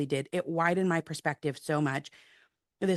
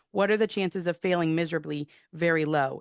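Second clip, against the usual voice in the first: ordinary talk, nothing marked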